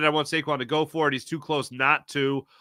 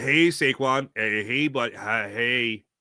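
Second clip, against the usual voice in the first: very slow, halting put-on voice with hesitations; 3 semitones lower than usual. Acting out a scene as Sirianni talking to Saquon: Nick Sirianni impression. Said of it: "that was my Nick Sirianni impression".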